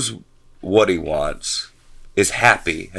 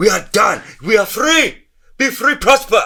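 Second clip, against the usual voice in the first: fake Indian accent, higher pitch; 14 semitones higher than usual. Imagining being the leader who frees north korea: put-on indian accent. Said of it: "I don't know why I turned into, like, an Indian dude".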